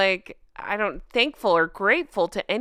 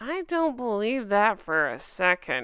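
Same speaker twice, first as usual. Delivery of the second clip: speaking through clenched, gritted teeth. Speaker reacting to a royal news report, keeping it secret: through gritted teeth. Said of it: "if I talk through gritted teeth".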